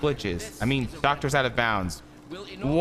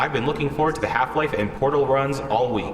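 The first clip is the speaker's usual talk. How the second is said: plain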